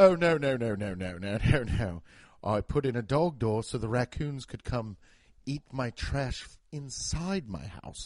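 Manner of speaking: low, affected, put-on British accent and cadence. Imitating a british person explaining something, imitating a british accent. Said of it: "when a British person says it with their affectation and their cadence".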